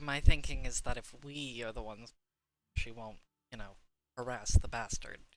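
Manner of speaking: voice brought down low. Speaking in character during a tabletop game: lowered voice. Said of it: "I'm gonna lower my voice and just be like".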